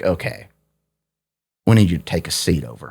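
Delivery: put-on voice with Southern accent. Retelling what the cops said to the speaker: Southern accent. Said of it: "I don't know why they had a Southern accent".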